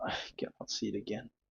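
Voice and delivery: quick, soft whisper, spoken as if to himself.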